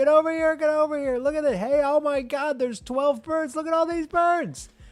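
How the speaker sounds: very loud, high, overjoyed, gushing excited yelling. Retelling calling a partner over to see the birds: imitating own excited yelling. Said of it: "yelling to my partner".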